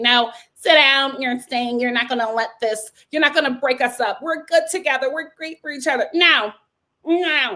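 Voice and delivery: firm, stern, no-nonsense, commanding acted tone. Retelling how she told him to stay: imitating a stern demand. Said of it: "she tried to be stern and say".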